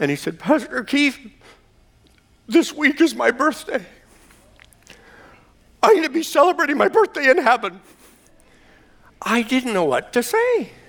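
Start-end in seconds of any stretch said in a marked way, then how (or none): 0.4-7.8 voice choked with emotion, acted, pitched up. Retelling what a man said after the service: imitating a choked-up man. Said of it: "he was all choked up".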